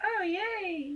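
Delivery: put-on very high babyish talk. Speaker shows how they talk to their pets, baby voice. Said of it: "I'm acting like a baby to them".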